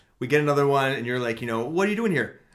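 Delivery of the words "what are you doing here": very gravelly, nasty, mean ghost voice. Describing an EVP recording, imitating a gravelly, mean ghost. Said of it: "Like real gravelly, mean voice".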